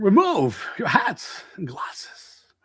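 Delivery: put-on slow, creepy, whispered old man voice.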